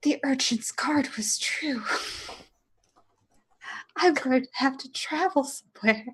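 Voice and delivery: stunned, shocked, breathy whisper. Speaking as Henry in a shocked moment, shocked whisper. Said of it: "with sort of the shocked whisper says".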